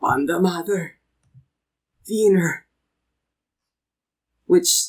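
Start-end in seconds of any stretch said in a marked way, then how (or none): 0.0-2.7 rough, gravelly giant voice. A narrator voices a giant addressing the listeners, in a gravelly voice. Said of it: "a gravelly voice emerges saying".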